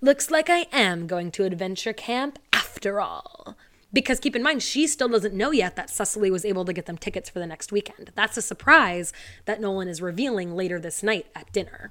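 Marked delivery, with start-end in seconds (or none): 0.0-3.6 acted, slow, sinister, scheming tone. Retelling a scene where Ella schemes to herself: imitating Ella's sinister self-talk. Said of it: "sinisterly is talking to herself".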